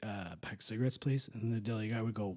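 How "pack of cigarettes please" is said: very quiet, barely there, hushed voice. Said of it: "he would very quietly say".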